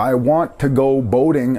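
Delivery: normal talking voice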